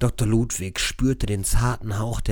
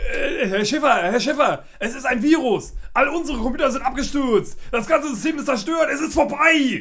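very high, panicked, stumbling stammer. A technician bursts into the room to tell Herr Schiffer the news; stammering in panic. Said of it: "Er stammelte panisch".

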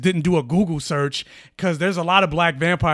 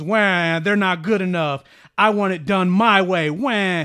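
mocking, slow, drawn-out, whiny crybaby voice. Mocking an online arguer's every rebuttal, mock-whiny crybaby voice. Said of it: "you are just a pretentious crybaby".

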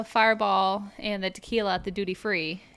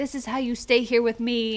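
put-on yelling; 2 semitones higher than usual. Retelling how someone came up and yelled at them: imitating someone yelling. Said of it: "he came and yelled at us".

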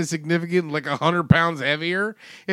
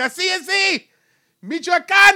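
mock drunk hollering, very high and drawn-out; 12 semitones higher than usual. Imitating drunk crowd members pointing at the camera: imitating drunk fans yelling. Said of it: "yelling and shit".

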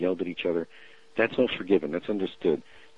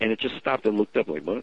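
ordinary talk, nothing marked

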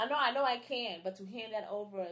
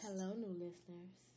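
put-on seductive voice, soft and sultry; 9 dB quieter than usual. Podcast co-host greeting new listeners in a put-on sexy voice. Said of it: "This is like my sexy voice".

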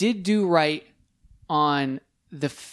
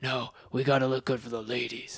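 very deep, low caped superhero voice; 4 semitones lower, 7 dB quieter than usual. Retelling a comic character's lines, the speaker does a Batman voice. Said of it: "This is my Batman voice".

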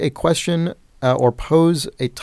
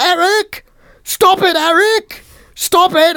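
mock very high, slow, loud, shrill, drawn-out screaming; 5 dB louder than usual. Telling a story about a bird, the speaker quotes the woman: imitating a woman screaming. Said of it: "the woman is screaming there going".

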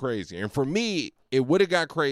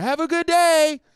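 very high, raised, calling yell; 5 dB louder than usual. Retelling calling out to her as she walked away: retelling own yell. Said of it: "I just yelled at her".

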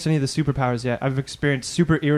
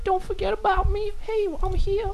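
very high, tiny, squeaky, silly little voice. Speaker imagines what his penis would say: voice of his penis. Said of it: "that's your dick's voice".

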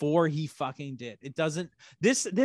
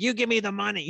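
geeky, nerdy delivery, pitched up; 5 semitones higher than usual. Retelling what the guy who robbed him said, nerdy voice. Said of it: "speaks in like, like this nerdy voice he's like".

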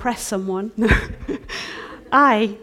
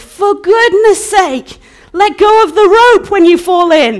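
ferocious, furious yell, very loud and high; 10 semitones higher, 14 dB louder than usual. Retelling being shouted at after surfacing from the water: imitating a man shouting ferociously. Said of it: "the ferociousness of a man shouting at me going".

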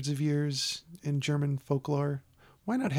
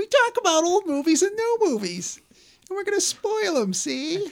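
very high, loud, silly puppet voice, swooping sing-song; 8 dB louder than usual. Describing a movie show as a ventriloquist dummy: ventriloquist dummy voice. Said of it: "I say it in this really dumb voice".

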